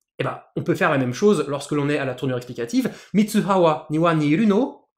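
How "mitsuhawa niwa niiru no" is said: pitch climbing on final word no. Teaching the Japanese explanatory form as a question, rising intonation on final no. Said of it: "en montant bien l'intonation en fin de phrase".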